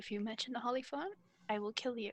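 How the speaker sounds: speaking really quietly. Lavender leans over to Moroccan while walking, very quiet murmur. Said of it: "really quietly says".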